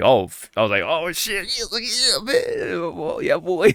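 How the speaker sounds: mock-giddy voice. Recalling Metal Sonic appearing, replaying their own reaction, giddy. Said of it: "a little giddy".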